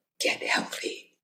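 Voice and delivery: hushed, soft, breathy whisper, very close. Retelling what an inner voice said at a graveside: imitating a whisper. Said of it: "whispered into my ear".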